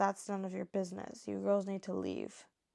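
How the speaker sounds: normal talking voice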